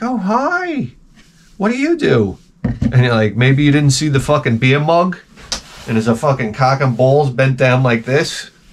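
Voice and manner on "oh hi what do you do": very high, very slow, swooping sing-song woman's voice. Acting out a woman answering a flirt at a bar: imitating a woman at a bar. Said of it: "She's like".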